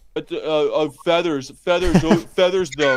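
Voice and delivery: put-on mocking voice that sounds deliberately stupid. Retelling how a streamer mocked him: imitating Lifting Vegan Logic mocking. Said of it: "taking the piss as if feathers".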